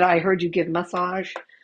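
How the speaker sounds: put-on Irish accent. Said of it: "in his Irish accent".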